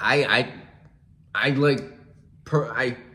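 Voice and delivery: stumbling, stuttering. Thanking the person he addresses, the speaker stumbles: stuttering, stumbling over words. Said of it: "I'm stumbling. I'm stuttering".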